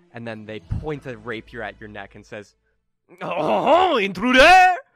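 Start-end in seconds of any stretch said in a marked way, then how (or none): 3.2-4.7 very high, loud, shrill fake French accent. Voicing a character pointing a rapier: put-on French accent. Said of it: "A French frog".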